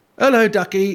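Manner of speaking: put-on high children's puppet voice. Retelling a Sooty and Sweep episode: imitating Sweep. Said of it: "like this".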